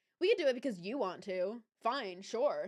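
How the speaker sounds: ordinary talk, nothing marked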